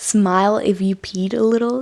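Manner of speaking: ordinary delivery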